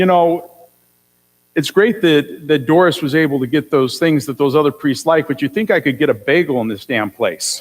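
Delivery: ordinary talk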